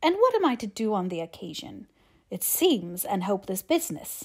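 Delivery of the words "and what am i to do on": usual speaking voice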